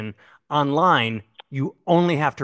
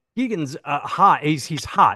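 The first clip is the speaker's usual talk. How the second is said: ordinary talk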